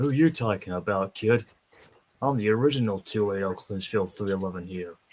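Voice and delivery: the deepest, lowest voice possible. Acting out a talking engine who turns out to be male: deepest possible voice. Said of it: "Just the deepest possible voice".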